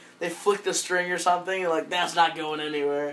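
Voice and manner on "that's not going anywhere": fatherly, matter-of-fact, typical dad voice. Imitating a father checking a strapped-down load: imitating a dad. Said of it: "and then fathers when they".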